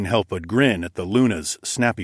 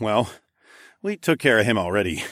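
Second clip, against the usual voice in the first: plain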